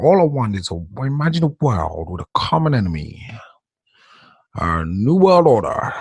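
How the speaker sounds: put-on old man voice impression. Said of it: "That's how he sounds".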